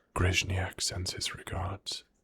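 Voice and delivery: very quiet, close whisper. Voicing a character who pulls a player close: whispering. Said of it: "she whispers to you".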